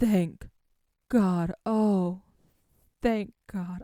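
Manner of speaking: close to crying. After anxiously waiting for someone to check the computer, close to tears. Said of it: "I'm going to I'm going to cry".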